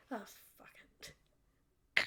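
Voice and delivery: low mutter under the breath. Narrating a roleplay scene, voicing a character reacting at the table, muttered under breath. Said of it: "you just hear under her breath".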